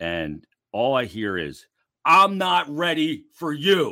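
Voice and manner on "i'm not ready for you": really loud, pitched-up barked delivery. Retell what you heard at the locker room door while taking your skates off, imitating Pat Egan's really loud barking. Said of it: "this really loud barking at me".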